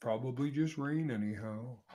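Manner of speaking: put-on cartoon donkey voice. Answering a chat comment about voices, doing an Eeyore voice. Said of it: "Eeyore voices are fantastic".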